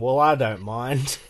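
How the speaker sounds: put-on thick broad Australian accent. Retelling a reply to players who said it was far, thick Australian accent. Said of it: "thick Australian accent going".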